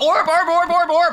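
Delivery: voice breaking up, cracking very high. Speaker repeats one word several times, voice cracking. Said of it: "my voice cracked".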